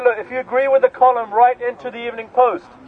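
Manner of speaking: usual speaking voice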